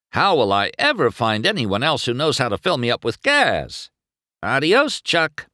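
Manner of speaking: high, snorting, mocking, dripping sarcasm. McQueen jeers at the pit crew member who just quit on him, sarcastic with a snort. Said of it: "He snorted and added sarcastically".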